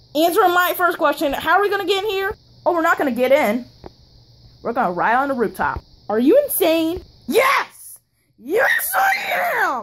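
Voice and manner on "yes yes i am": very high, very slow, swooping screaming yell. Answering whether they are insane in a plushie skit: screaming. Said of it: "you don't have to scream that loud".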